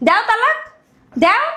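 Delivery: yelling in anger. In a shouting match at home, one spouse dares the other to divorce, shouting angrily. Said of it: "চিল্লাচিল্লি কেন এই ঘরের ভিতরে?".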